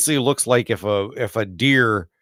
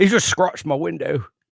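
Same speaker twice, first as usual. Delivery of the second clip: put-on English accent, slightly raised pitch; 6 semitones higher than usual. Reacting to a clawed creature at the window, in an English accent. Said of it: "that was an English accent".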